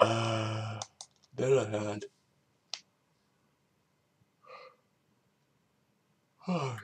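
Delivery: speaking through a yawn. Having woken up barely an hour ago, the speaker talks while yawning. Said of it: "sorry, I'm yawning a lot".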